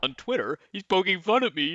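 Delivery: ridiculing, mocking tone. Imagining a phone call reporting a crime to police: mocking imitation of a caller. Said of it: "I would kill to hear that phone call".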